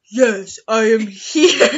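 deep, booming, belted-out voice. Acting out a Romeo and Juliet scene, answering Juliet's call, deep Romeo voice. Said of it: "I have a deep voice because I am male".

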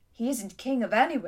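ordinary delivery

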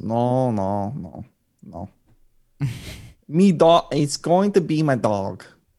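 put-on weird mix of Italian and Mandarin accents. Speaker imitates a man answering his family members, in a weird made-up mixed accent. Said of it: "What accent was that?".

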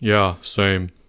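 low, half-swallowed mumble. A narrator reads a student agreeing with a classmate's apology to their teacher, mumbled. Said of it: "mumbled Albert".

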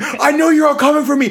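play-acted, very high-pitched, shrill, loud screaming. Retelling what a housemate said after grabbing the apple: imitating someone screaming. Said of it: "he's screaming".

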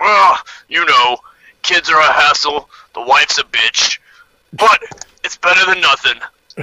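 grunting troll voice. Voicing a troll who answers a question about his family: troll grunting back. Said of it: "The troll grunts back".

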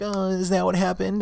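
very high, mocking sarcastic tone. Retelling a driver's reply after being told he came into their lane, imitating sarcasm. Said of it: "It's kind of like being sarcastic".

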